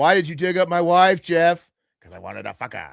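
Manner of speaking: loud, high, belted character voice. Acting out a movie exchange as Gus: imitating Gus.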